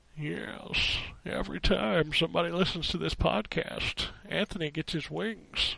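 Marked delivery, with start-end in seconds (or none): 1.3-5.8 rusty put-on voice, quieter. Opening the episode with a joke line: out-of-practice Jimmy Stewart impression. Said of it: "my Jimmy Stewart's out of practice".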